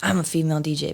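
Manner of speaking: mock bone-dry, matter-of-fact deadpan delivery. Retelling how she got booked as a DJ, recreating her own reply said really dry. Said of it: "but I said it really dry".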